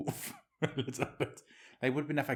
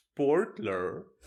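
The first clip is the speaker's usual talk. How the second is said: put-on German word sportler in English accent; 4 semitones higher, 5 dB louder than usual. Repeating how the other speaker said the german word sportler, english pronunciation of sportler. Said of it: "Sportler is just a German word and you just pronounce it English and you were like".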